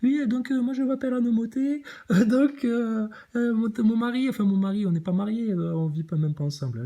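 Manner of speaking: goofy, put-on, high southern French accent. Goofing around for a joke, speaker slips into a put-on southern french accent. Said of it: "je prends toujours l'accent du Sud quand je fais le gogol".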